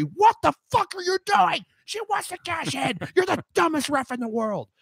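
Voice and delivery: very high, shrill hollering. Recounting yelling at the referee on TV, retelling yelling at the referee. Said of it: "I'm like two inches away from the T V yelling at the referee".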